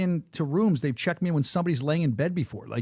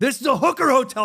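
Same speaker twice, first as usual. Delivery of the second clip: mock very high, shrill, loud screaming; 9 semitones higher, 6 dB louder than usual. Retelling a hotel argument with a clerk: imitating own screaming. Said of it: "started screaming at him that it was a hooker hotel".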